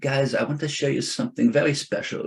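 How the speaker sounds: put-on French accent. Retelling what the realtor said when showing land: French accent. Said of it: "she had a French accent, which I'm not gonna do again".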